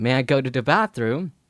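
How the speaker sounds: usual speaking voice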